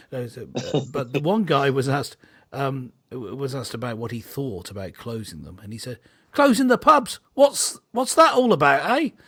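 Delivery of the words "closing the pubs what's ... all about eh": shrill, very high, very loud put-on London accent. Quoting a man asked about closing the pubs, london accent. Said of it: "my best London accent".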